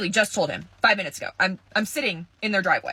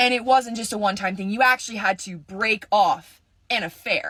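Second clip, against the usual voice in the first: normal talking voice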